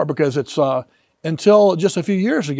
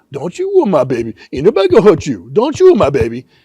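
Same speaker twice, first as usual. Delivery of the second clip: loud, swooping, mocking put-on woman's voice; 5 dB louder than usual. Retelling what Nancy told him during a meal, imitating Nancy's voice. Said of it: "I've been criticized for mocking her voice".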